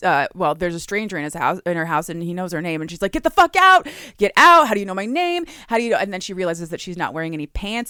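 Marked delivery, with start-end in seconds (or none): 3.1-6.0 frantic, panicked, high, loud freaked-out shouting. Retelling a story where she finds a stranger in her house: imitating a woman freaking out. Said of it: "she immediately starts freaking out".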